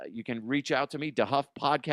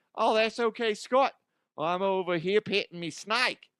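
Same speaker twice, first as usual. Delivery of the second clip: put-on laid-on Australian accent, pitched up; 7 semitones higher than usual. Answering when called on to speak up, as Connery with an Aussie accent. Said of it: "I kind of did Connery with a Aussie accent".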